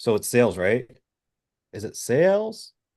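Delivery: uncertain rising upturn on each sales. Coaching someone on delivery, demonstrating an uncertain upward inflection. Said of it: "There's upward inflection".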